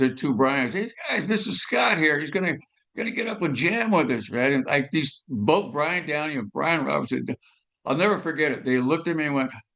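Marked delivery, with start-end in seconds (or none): 0.7-4.3 light, high yell. Retelling how someone yelled up to the stage: imitating Phil yelling. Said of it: "he yelled up to the stage".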